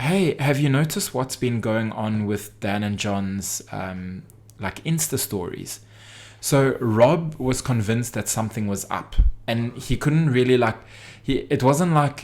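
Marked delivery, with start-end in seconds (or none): none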